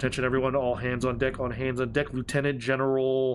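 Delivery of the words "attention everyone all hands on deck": normal talking voice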